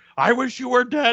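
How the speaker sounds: high, screamed, play-acted outburst. Retelling a funny movie scene, imitating someone screaming. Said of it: "He's like, screaming".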